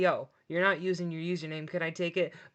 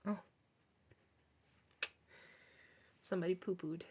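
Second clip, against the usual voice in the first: put-on, tongue-in-cheek sarcastic tone; 11 dB quieter than usual. Acting out a reaction to finding poop in the Sky Tubes: put-on sarcastic tone. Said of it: "I'm being sarcastic".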